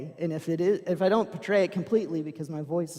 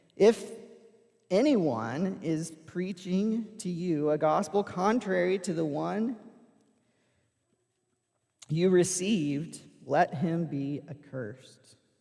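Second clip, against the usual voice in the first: normal talking voice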